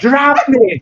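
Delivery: very high shout against rushing wind. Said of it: "It's not much of a whisper".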